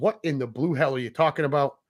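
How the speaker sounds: ordinary delivery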